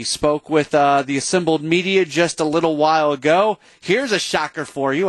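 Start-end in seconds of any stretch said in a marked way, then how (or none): none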